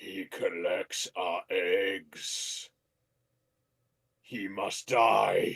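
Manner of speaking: hushed, slow, drawn-out whispered chicken-creature voice. Voicing the caged chicken as a player questions it: voicing the chicken creature. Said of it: "What do you wanna ask it?".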